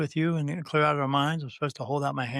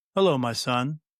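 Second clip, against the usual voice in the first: really deep, present, authoritative, commanding voice; 2 semitones lower than usual. Retelling a voice that came through and greeted the speaker, deep commanding voice. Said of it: "It was a deep, really deep sounding".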